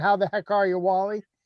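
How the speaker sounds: ordinary talk, nothing marked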